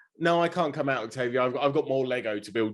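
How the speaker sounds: ordinary talk, nothing marked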